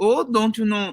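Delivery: very high-pitched put-on Minnesota accent. Showing a better version of the last accent: Minnesota accent. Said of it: "I could do better Minnesota".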